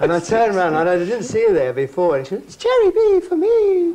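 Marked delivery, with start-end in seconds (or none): 2.5-3.9 very high, light, slow, put-on little-girl voice. Retelling what a sixty-year-old woman behind him said, in a little girl's voice. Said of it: "she did the little girl's voice".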